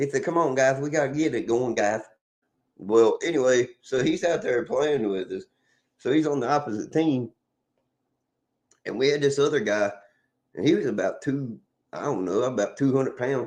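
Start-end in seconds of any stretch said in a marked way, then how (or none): 0.2-2.0 put-on lisping voice. Retelling how a coworker always greeted the group: imitating Dapper's lisp. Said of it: "he had this lisp anyway".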